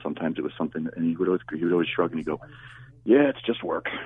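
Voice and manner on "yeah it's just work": put-on sarcastic tone, much higher. Recalling what a man always said when something awful came: retelling a kind-of-sarcastic remark. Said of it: "he was kind of being sarcastic when he said it".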